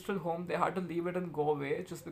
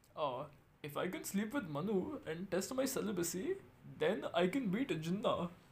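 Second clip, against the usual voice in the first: in-character voice of an Indian leader; 4 dB quieter than usual. Retelling a quote, in Gandhi's voice. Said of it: "in his voice".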